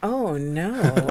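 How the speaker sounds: mock insincere dismay, not sounding sad. Mimicking another speaker's reaction to an incident: imitating someone not sounding sad. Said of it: "you don't sound sad".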